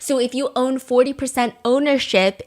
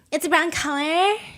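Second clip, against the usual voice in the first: put-on Valley Girl cadence, pitched up; 5 semitones higher than usual. Quoting a phrase about a brown color, in a Valley Girl cadence. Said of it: "I felt like it was the Valley Girl cadence, which I also do sometimes".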